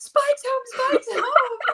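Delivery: shrill, very high, excited screaming. Retelling a brother seeing the dog return: imitating brother screaming. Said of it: "He was screaming".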